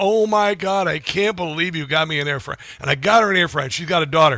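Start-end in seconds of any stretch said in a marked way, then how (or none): 0.0-2.6 mock talking while laughing through the words. Retelling how she called about getting an air fryer, imitating someone laughing. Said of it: "She called laughing like".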